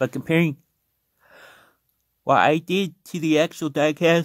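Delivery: talking through a yawn. Comparing a customized toy car to the actual diecast, talking through a yawn. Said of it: "sorry for yawning".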